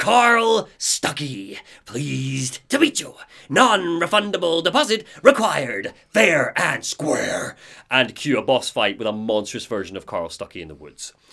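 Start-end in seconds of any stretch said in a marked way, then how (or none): 0.0-7.5 distorted monster voice, register wobbling, octaves dipping. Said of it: "His voice is all, like, warped".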